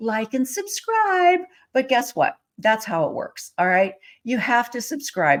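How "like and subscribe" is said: put-on very high, tiny baby or toddler voice. Imitating a little girl who picked the phrase up from YouTube: little tiny baby voice. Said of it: "I hear her little tiny baby voice going".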